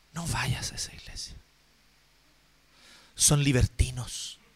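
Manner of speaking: whispered, hushed, grave and serious. Acting out a church sister's warning against another church: imitating a warning tone, like against a sect. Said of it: "En ese tono".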